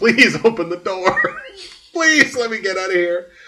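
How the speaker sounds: high-pitched pleading, begging voice. Retelling a wrestling match, acting out a wrestler begging: imitating a begging plea. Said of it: "Punk's just like".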